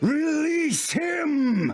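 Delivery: very high, slow, ringing commanding cry.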